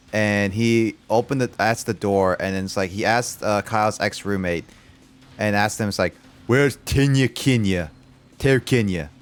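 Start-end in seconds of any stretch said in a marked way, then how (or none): 6.4-9.0 put-on slurred drunken voice. Retelling a late-night visitor at the door with vodka, imitating a drunk voice. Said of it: "in the drunk voice kind of thing".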